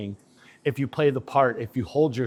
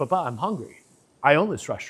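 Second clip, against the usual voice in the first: spoiled, self-important, entitled insistence with attitude. Retelling telling a father about being hungry: imitating own entitled attitude. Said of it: "I had an attitude about it".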